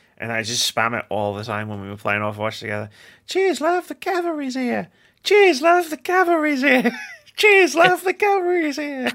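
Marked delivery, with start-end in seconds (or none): 3.3-9.1 British character voice, much higher, slower. Recalling spamming a game voice line a teammate hated, Tracer voice line impression. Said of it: "that voice line for Tracer".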